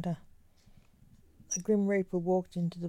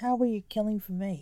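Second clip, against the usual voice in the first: ordinary delivery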